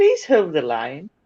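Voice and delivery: polished, posh telephone voice, pitched low. One speaker teases another about her posh voice by doing Lainey's telephone voice. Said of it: "Lainey's telephone voice".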